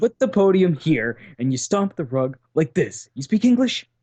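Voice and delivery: put-on, high, bossy, condescending yelling. Retelling a man who came up screaming orders at the speaker; imitating condescending yelling. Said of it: "was like".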